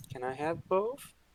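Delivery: barely audible, nervous, very quiet, high little voice. A nervous character in a role-play scene answering an offer, in a very quiet voice. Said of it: "in a very quiet voice you could barely hear".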